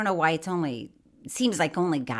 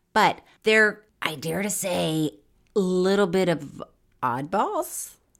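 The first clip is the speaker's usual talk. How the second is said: voice breaks mid-word on "oddballs". Speaker describing a group of people to the others, voice cracking. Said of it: "my voice cracked when I said it".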